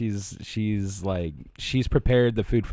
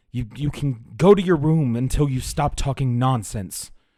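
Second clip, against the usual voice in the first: put-on enraged voice, higher and louder; 4 semitones higher, 4 dB louder than usual. Voicing a mother sending her child to their room: acting furious mother. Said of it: "she's filled with rage".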